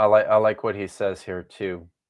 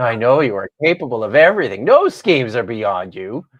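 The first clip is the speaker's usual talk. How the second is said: heavily sarcastic, overdone, loud and swooping; 2 semitones higher, 5 dB louder than usual. Showing how to answer a challenge with Job's words: dripping sarcasm. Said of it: "with all the same dripping sarcasm".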